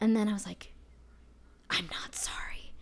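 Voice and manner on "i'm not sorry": slow, soft stage whisper under breath. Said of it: "I actually stage whispered it out".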